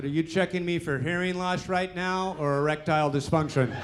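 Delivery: plain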